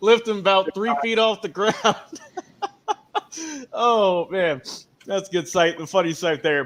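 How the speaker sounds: talking through laughter. Speaker reacts to something funny they just watched, laughing while talking. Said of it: "I'm sorry, I'm laughing".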